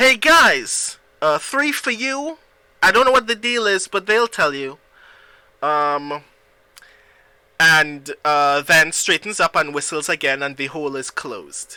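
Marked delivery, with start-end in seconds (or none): 0.0-4.8 raised, pitched-up, offhand shout. Voicing a captain leaning into a hole: shouting past the players. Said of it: "just kind of shouts".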